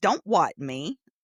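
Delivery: sharp, teasing snap. Retelling John's joking reply: imitating John's mock-irritated tone. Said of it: "in that tone of voice".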